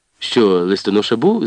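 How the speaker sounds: ordinary delivery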